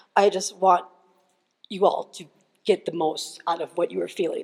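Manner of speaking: plain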